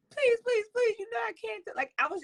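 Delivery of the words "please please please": very high, begging, screaming cry. The speaker retells a past moment when she begged; retelling a screaming plea. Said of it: "I was like screaming and pleading".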